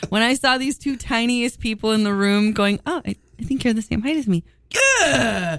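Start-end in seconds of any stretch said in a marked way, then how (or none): 2.9-4.4 shy, meek, timid little voice. Retelling two short people meeting, imitating a meek voice. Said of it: "doing this meek thing".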